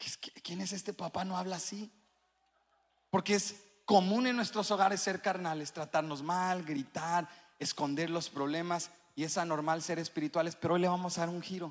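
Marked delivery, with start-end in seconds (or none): 0.0-1.9 put-on soft, puzzled child voice. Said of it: "Tus hijos hasta dicen".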